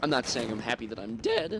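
voice cracking and breaking. Commentating a game after dying, voice cracking. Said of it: "that voice cracked".

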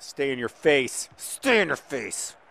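very angry, in-your-face intensity. Telling the listeners that this game is not a joke to you, really angry. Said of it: "Sorry, I'm really angry".

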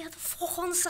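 mock very high screaming fan outburst. Retelling what the guy behind at a football game shouted: imitating a man screaming. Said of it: "The guy behind me screaming".

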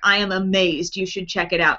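plain

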